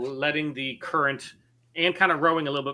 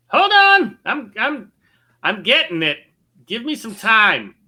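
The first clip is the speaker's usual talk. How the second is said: very loud, high, drawn-out shout swooping upward; 9 semitones higher, 11 dB louder than usual. Voicing a rowboat man calling up to a ship: NPC shouting up to a ship. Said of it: "shouts up to the ship".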